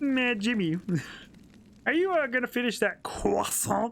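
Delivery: high, gremlin-like puppet frog character voice. Showing the silly voices they can do: Kermit voice doing Carl. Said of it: "Kermit doing Carl".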